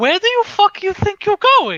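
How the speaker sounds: high, loud, swooping shriek.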